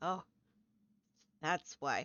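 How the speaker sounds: quiet, murmured realization, as if to oneself. Playing a character who closes the door and steps back, very quiet, to herself. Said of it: "just very, very quietly".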